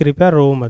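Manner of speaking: ordinary talk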